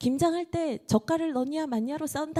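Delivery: high-pitched AI narrator voice.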